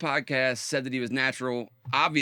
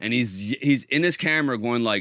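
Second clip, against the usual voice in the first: ordinary delivery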